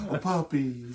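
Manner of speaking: put-on soft feminine voice. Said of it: "he does almost like the feminine, Michael, stereotypical voice".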